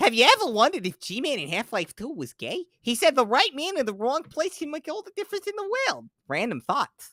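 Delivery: put-on, very high-pitched, dopey, stupid-sounding voice. Reading a post aloud in the most stupid voice possible: deliberately stupid voice. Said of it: "read this in the most stupid voice I can".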